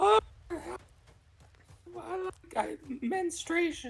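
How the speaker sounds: very high, swooping, put-on woman's voice. Showing off the voices they can do, in a put-on woman's voice. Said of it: "I can do a uh, woman's voice like".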